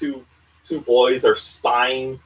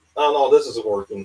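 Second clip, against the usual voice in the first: usual speaking voice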